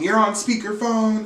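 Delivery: shrill, enraged, very high furious angry scream. Retelling a reality show scene where Uba is screaming: imitating Uba screaming. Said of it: "She's screaming".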